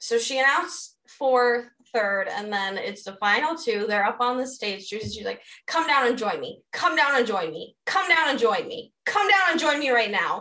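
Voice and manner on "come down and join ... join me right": put-on aggressive voice, repeated, higher pitch. Retelling how Tyra called the final two down: imitating Tyra aggressively. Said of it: "It was so aggressive".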